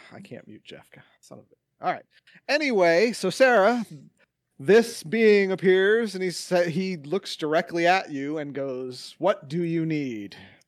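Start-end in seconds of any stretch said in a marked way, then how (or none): 9.2-10.4 menacing, annoyed, threatening, irritated voice. A summoned being looks directly at Sarah; menacing, pissed-off. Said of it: "it's a very menacing kind of like you pissed him off".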